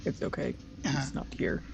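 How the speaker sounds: whispered, hushed, self-soothing mutter. Narrating a scene, voice Emmerich as he clutches the doll: Emmerich muttering. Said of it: "kind of mutter".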